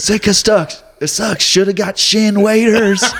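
put-on yell. Retelling a passing driver shouting through his window at him, imitating the yell. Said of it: "he's yelling at me".

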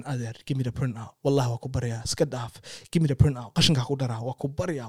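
imploring, pleading, begging voice. Retelling begging a driver for the printout: retelling a plea. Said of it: "I'm pleading with him".

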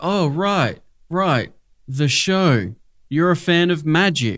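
odd, off-putting, weird, slow delivery. Retelling a film scene, leaning in to speak: weird Nicolas Cage delivery. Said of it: "he does this weird delivery of like".

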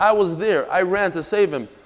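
ordinary talk

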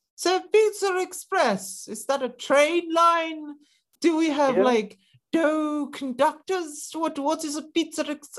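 lofty, upper-class voice, pitched very high. Joking that the royal family knows Pizza Express, doing a Queen impression. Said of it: "she was like".

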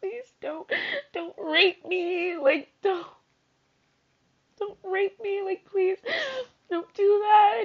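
high, tearful sobbing voice. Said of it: "I'm gonna start crying again".

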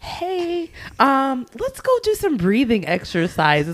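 put-on gentle, high girlish voice. Retelling a TikTok lady's breathing suggestion: imitating a soft voice. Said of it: "this girl come all soft to me".

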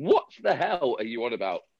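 mock heckling, shouted. Retelling shouting at the tv during the show: retelling own shout at the tv. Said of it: "I was shouting at the T V going".

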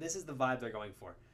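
ordinary talk

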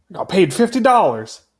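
put-on Texan accent. Quoting a line to show a character's accent: imitating Oliver's Texan accent. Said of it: "a Texan accent".

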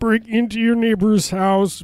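high, slow, backwards-record-sounding voice.

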